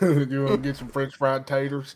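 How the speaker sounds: put-on Southern drawl. Teasing the other speaker after comparing him to Sling Blade: Sling Blade voice. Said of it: "Sling Blade".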